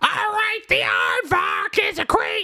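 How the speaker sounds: very high-pitched comic voice swooping all over. Joking about a comedian reading the dictionary, in a Gilbert Gottfried impression. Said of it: "but in his voice".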